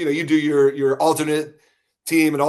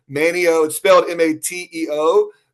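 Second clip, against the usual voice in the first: normal talking voice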